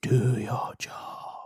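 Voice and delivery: eerie, breathy, disembodied whisper. Telling a story, voicing the weird voice in the basement, whispering. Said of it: "the weird voice that's whispering".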